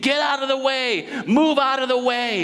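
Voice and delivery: mock desperate, high-pitched screaming yell. Retelling a father pushing through a slow crowd, acting out a father's scream. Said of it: "I'm sure he's screaming".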